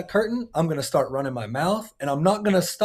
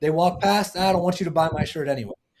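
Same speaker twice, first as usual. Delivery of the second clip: usual speaking voice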